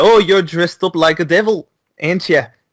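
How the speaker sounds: teasing put-on Scottish accent. Retelling the children teasing James about his costume: Scottish accent. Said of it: "I'm in a Scottish accent".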